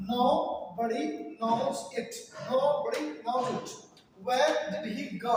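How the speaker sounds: very slow, word-by-word dictation.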